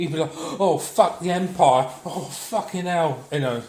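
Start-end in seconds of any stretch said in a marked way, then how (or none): 0.4-3.2 put-on scared-stiff wailing, slow drawn-out panic. Acting out a character who sees a Star Destroyer appear: mock panic. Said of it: "he'd shit his pants".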